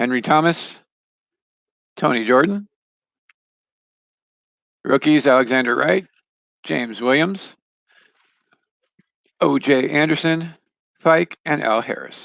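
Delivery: voice giving out. Reading out a list of player names before pausing for a sip, voice giving out. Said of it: "my voice is going".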